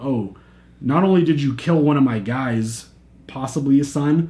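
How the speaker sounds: ordinary talk, nothing marked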